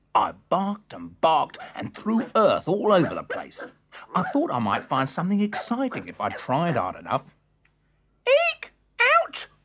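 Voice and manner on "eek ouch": very high, cross little squeaking voice. A narrator reads a small voice crying out from under the leaves, cross little voice. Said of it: "Said a cross little voice".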